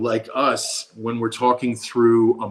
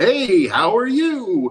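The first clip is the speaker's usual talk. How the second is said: mock extra-friendly, very high, sing-song voice; 10 semitones higher, 4 dB louder than usual. Retelling a burger place worker greeting over the microphone: imitating a very friendly voice. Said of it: "the most friendly voice".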